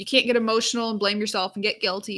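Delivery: ordinary talk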